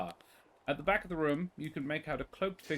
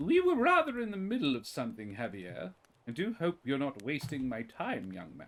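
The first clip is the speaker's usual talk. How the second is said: put-on voice of an older woman. Voicing an older woman in a booth who scolds a player: older woman character voice. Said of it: "the figure is an older woman".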